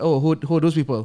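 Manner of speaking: ordinary delivery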